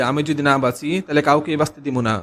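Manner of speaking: plain reading voice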